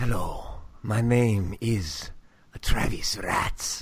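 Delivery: put-on seductive lover voice that sounds creepy. Introducing himself on a podcast, put-on seductive lover voice. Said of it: "I was trying to go Lothario".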